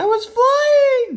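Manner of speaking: squeaky, very high voice. Narrator reads Bright Bill's line after the wind lifts him: squeaky Bright Bill voice. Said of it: "he squeaked".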